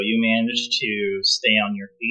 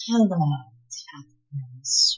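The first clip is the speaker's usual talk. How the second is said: hushed, soft half-whisper, right at the ear; 4 semitones higher, 4 dB quieter than usual. A familiar voice greets a player character as invisibility fades, half-whisper. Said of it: "you hear a distressingly familiar voice whisper".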